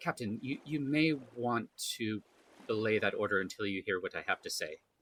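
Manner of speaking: murmured, hushed and quiet, like a private aside. Addressing the captain who plans to leave now, speaking quietly. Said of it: "I say quietly to the captain".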